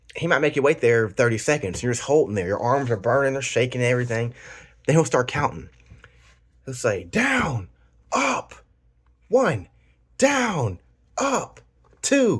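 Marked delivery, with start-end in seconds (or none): 7.0-12.4 play-acted, very high, very slow, top-of-the-lungs yelling. Describing push-up training, imitating the instructor yelling the count at the top of his voice. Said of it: "he's yelling it like at the top of his voice".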